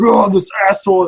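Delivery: furious exclamation. Retelling a fight in a queue, imitating the speaker's angry father. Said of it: "my father got angry".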